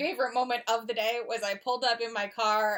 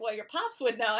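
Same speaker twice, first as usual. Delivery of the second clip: ordinary talk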